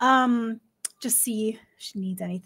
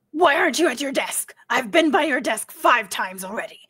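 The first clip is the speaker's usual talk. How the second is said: brusque, barking, curt delivery; 2 semitones higher than usual. Acting out the type who barks orders, confronting Nancy, in a barking tone. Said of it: "speak in a barking tone regardless of what they're saying".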